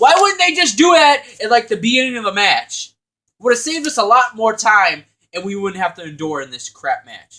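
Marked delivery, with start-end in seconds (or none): 0.0-5.0 full-on loud, high, swooping yelling rant. Complaining about a match in a review, yelling. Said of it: "I'm yelling a lot in this review".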